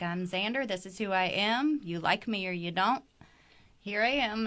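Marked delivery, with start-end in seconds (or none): none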